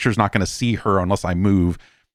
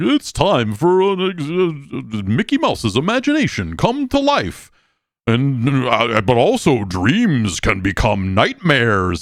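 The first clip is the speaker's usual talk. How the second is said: big, high, swooping, drawn-out theme-park announcer voice; 5 semitones higher than usual. Comedian recalls a Disney show introduction, in a booming Disney announcer voice. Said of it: "their big booming fucking Disney guy voice".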